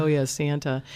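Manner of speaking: ordinary talk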